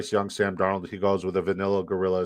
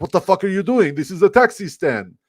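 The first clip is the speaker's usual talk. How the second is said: put-on speaking with Middle Eastern accent; 11 semitones higher, 8 dB louder than usual. Retelling a clash with a man who honked at him, in a put-on Middle Eastern accent. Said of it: "That was supposed to be my Middle Eastern accent".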